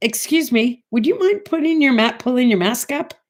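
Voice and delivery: very sweet, courteous tone. Retelling asking a man on the bus to raise his mask: retelling a very sweet request. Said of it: "I turned to him very sweetly".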